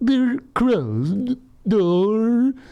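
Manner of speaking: very high, loud cartoon narrator voice.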